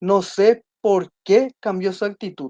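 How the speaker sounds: ordinary talk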